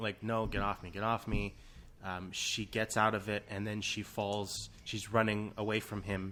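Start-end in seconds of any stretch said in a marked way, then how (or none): none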